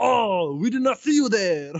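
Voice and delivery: thick, heavy, put-on French accent, very high-pitched. Repeating what a guy said as he turned over, the speaker uses a heavy French accent. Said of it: "goes in a heavy French accent".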